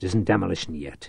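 growling. A man regaining control tells a panicking companion to stop, growled. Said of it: "he growled".

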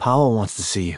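ordinary delivery

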